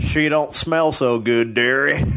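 put-on Southern accent like a cowboy. Describing a movie's deleted scene, quoting the character's line in a southern cowboy accent. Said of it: "he has a southern accent like a cowboy".

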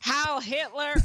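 put-on Southern accent. Joking about a Southern fake Nazi nobody punched: mocking Southern accent. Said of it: "She just made fun of a Southern accent".

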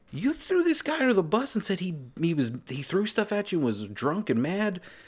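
incredulous whoa, thrown up high in disbelief.

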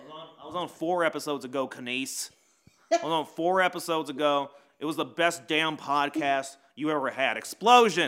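very loud, insistent, high-pitched holler. Correcting the host about an earlier episode: Adam Langlois impression. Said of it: "I do a better Adam Langlois than I do".

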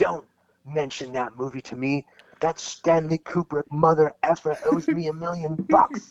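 mock bitter, angry, high-pitched rant. Retelling an outburst in front of the showrunners: imitating an angry man. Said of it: "he got this dark look on his face, and he really looked like he was, like, pissed off".

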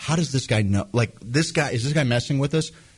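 normal talking voice

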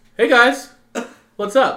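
booming, very loud, high, drawn-out call. Doing an impression of how Quinn talks to people: Quinn impression. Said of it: "my Quinn impression".

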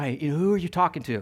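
soft, secretive, hushed stage half-whisper. Acting out an imagined scene, the wife asking about a phone call: imitating a half-whisper. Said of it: "she kinda comes over and whispers".

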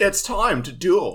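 high, badly drawn-out delivery. Friends guess character voices; speaker does a very shitty Mai impression. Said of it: "That was my very shitty Mai impression".

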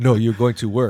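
put-on slight Portuguese accent. Retelling what mom said about going to dj: imitating a slight portuguese accent. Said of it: "That was that little accent".

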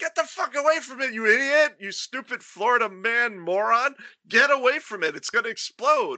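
furious, high-pitched, angry yelling. Retelling bystanders warning a car owner near a burning car: imitating people yelling. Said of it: "people are yelling and screaming".

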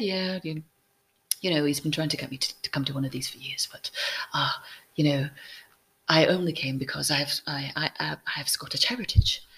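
imitated British accent. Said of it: "she had that British accent".

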